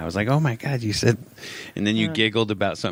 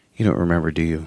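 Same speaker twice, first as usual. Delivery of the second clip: put-on dead-serious child voice, deadpan, lower; 4 semitones lower, 4 dB louder than usual. Retelling a child's question while painting: imitating a kid speaking dead serious. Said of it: "He's dead serious the entire discussion".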